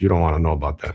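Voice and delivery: level, flat, expressionless deadpan. Retelling an older guy's answer in a car: imitating a deadpan reply. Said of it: "he just looked at me like a deadpan".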